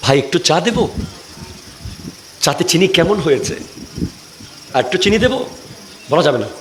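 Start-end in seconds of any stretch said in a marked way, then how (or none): 0.0-5.4 soft, sweet, sweet-talking voice. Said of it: "মিষ্টি ভাষায় কথা বলবেন না".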